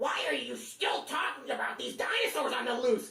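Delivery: high raptor screech, muffled through a full mouth. Extending a Jurassic Park joke, the speaker voices the velociraptor, screeching through bites. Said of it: "They'd screech through bites of your pulpy flesh".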